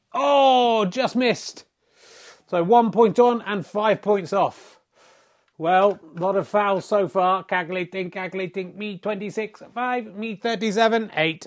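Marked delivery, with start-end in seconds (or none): 7.4-11.4 mechanical, robotic computer-like voice. Announcing the snooker scores as the robot version of oneself: robot voice. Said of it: "how Robot Voice feels".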